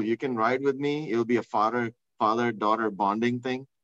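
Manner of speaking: normal talking voice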